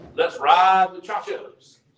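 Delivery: put-on small, high, crackly old-professor voice. Recalling a professor at Erskine who'd walk in, imitating his little crackly voice. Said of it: "he had a little crackly voice".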